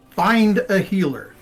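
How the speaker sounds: military command voice. In a role-play, reacting to news that a lady is injured, full military voice. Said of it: "full military voice".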